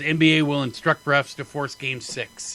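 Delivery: ordinary talk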